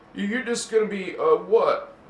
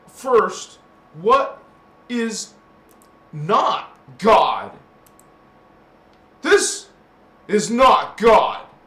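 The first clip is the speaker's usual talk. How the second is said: loud, raised voice swelling with emotion; 8 dB louder than usual. Explaining something to listeners and getting emotional, in a raised emotional voice. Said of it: "I'm not trying to raise my voice, sorry".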